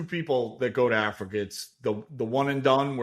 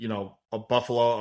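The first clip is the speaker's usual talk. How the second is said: ordinary talk, nothing marked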